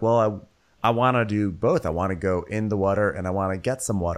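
ordinary talk

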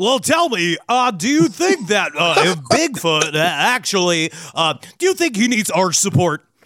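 halting talk-radio host voice, hesitant uhs throughout. Doing an impression of a late-night radio host asking a guest: George Noory impression. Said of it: "the only impression I do is George Noory".

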